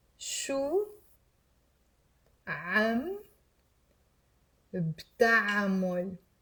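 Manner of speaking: very slow, deliberate pace, each word laid out. Saying an Arabic phrase for listeners to repeat aloud, very slowly. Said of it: "I will say it very, very, very slowly the first time".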